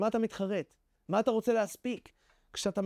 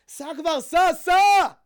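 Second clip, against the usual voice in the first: desperate bellow, very loud, slow, drawn out; 7 semitones higher, 11 dB louder than usual. Retelling a student's story of fleeing in a car: retelling a shout at the driver. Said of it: "אני צועק לנהג".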